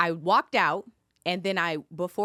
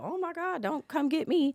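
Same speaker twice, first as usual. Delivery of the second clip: very high, playful, teasing pretend fright; 10 semitones higher, 4 dB quieter than usual. Retelling a man's words at a courtroom door: imitating a playful tease. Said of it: "he kinda playfully is like".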